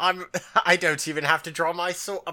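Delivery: dismissive villain voice with British accent. Quoting a show villain who won't even draw his sword, in british accent. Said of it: "Why am I shifting into a British accent?".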